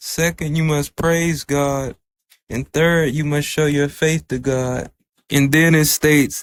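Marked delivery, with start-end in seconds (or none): none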